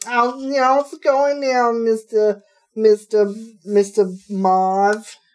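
put-on high, loud, dopey Brooklyn girl voice, one word stretched. Imitating a movie character: dopey Brooklyn girl voice. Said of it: "she's like a dopey Brooklyn girl".

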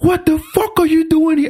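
high, flat, angry cursing.

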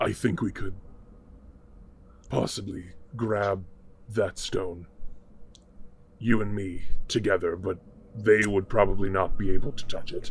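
very deep, murmured, hushed fiend voice. A narrator voicing a fiend speaking inside a player's mind, in a fiend voice.

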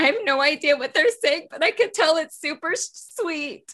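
very high, very loud, tearful speech. Voicing a character with tears streaming down her face: tearful. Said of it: "has tears streaming down her face and says".

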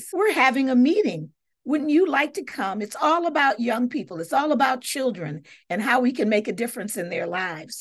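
usual speaking voice

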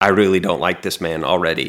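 normal talking voice

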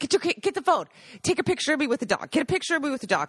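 imitated old man yelling. Telling how an old man yelled at his young kid, retelling the old man's yell. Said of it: "he yells at his like 8-year-old kid".

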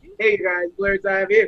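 good radio-host announcer voice. Teasing a co-host about his good announcer voice, Chris's announcer voice. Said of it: "he got the good announcer voice".

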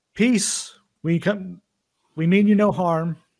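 shouting. In a role-play scene, a character raises his hands toward a defensive group, shouting. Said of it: "raises his hands and shouts".

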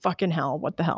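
mock-exasperated tone. Retelling a woman whose boyfriend ran into a house with her car: retelling exasperated swearing. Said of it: "exasperated as boyfriend runs into house".

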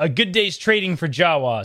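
normal talking voice

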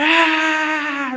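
put-on high-pitched, loud screaming child voice.

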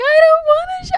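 put-on very high, loud, sobbing little-girl wail. Retelling a video of a stepdaughter answering her stepfather, imitating a crying child. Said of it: "and she's like crying".

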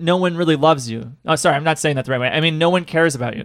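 plain

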